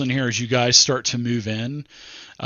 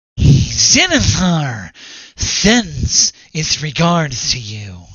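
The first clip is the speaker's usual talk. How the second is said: strongly nasal hooded goon voice; 3 semitones higher, 4 dB louder than usual. Describing hooded figures with swords, one speaks in a strongly nasal voice. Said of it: "in a nasally voice".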